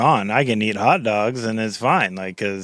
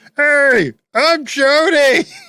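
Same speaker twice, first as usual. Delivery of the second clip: very high-pitched, loud little character voice; 7 dB louder than usual. Presenting a handmade bun craft and voicing it: voicing hot dog bun Chody. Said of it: "and he goes".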